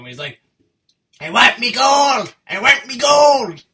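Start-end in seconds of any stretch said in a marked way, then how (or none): 1.2-3.5 very shrill, very loud, slow, each word stretched. Summing up a film character's lines: Leprechaun voice. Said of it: "what Warwick Davis is in this film".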